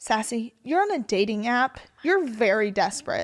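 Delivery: put-on dry, deadpan, matter-of-fact child voice. Retelling what a ten-year-old said in carpool: imitating a deadpan child. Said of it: "she looks at me dead-faced and goes".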